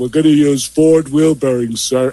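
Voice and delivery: mimicked deadpan voice. Retelling the answer someone gave to their question, mimicking a deadpan reply. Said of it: "I got the greatest deadpan response".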